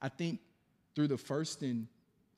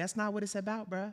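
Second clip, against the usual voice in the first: calm, high-pitched little voice; 6 semitones higher, 4 dB quieter than usual. Retelling what a calm boxer said in a clip: imitating Ryan Garcia's high-pitched voice. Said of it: "you got a little high-pitched voice".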